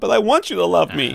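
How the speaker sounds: high, rough-edged voice. Retelling a listener's reply about using his pictures: imitating Keyshawn's voice. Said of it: "that's what he sounds like".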